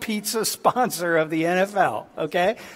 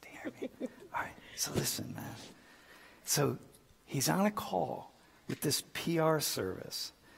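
hushed whisper under the breath, very quiet; 3 semitones lower, 16 dB quieter than usual. Telling a story while it is loud nearby, whispering. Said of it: "I'm just gonna whisper".

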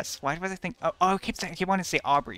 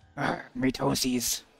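put-on monster voice. Joking during a game, doing a Bowser voice. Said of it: "That's how Bowser talks".

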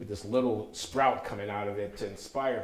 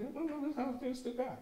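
put-on whimper, much higher and quieter; 6 dB quieter than usual. Retelling a stage scene where a mother makes Benita repeat her words, imitating Benita whimpering. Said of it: "So whimpering".

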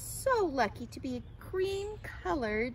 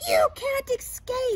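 piercing screech, very high and very loud; 11 semitones higher, 9 dB louder than usual. A crow in a story threatens the butterfly it is chasing; screeching. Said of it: "screeched the crow to Katisha".

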